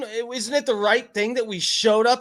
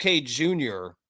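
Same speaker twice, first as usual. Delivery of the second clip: usual speaking voice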